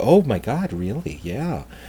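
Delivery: put-on very soft, hushed, slow old-lady gushing and marveling. Retelling a tour where others gushed: imitating little old ladies. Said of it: "the little old ladies".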